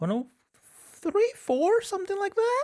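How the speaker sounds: very high, squeaky voice. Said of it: "Why did my voice get so high?".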